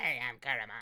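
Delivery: put-on cartoon creature voice. Voicing the game's in-training creature Caramon: put-on Caramon voice. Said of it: "Why do I keep doing this one voice".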